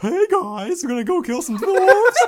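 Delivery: high-pitched, dumb-sounding dragon voice. Describing the dragon they play, the speaker does an idiot dragon voice. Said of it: "the dragon with the fucking idiot voice".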